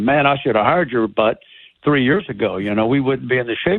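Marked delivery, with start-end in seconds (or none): none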